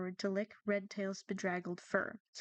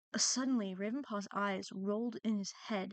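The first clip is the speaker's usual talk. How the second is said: ordinary delivery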